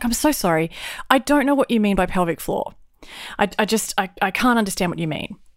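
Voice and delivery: ordinary talk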